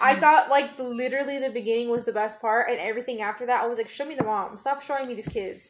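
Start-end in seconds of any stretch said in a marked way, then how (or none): none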